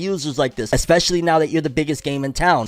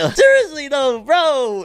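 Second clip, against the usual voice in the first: voice cracking high mid-word on bro; 10 semitones higher than usual. Talking to a bro after a joking plea to subscribe, voice cracking. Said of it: "my voice just cracked".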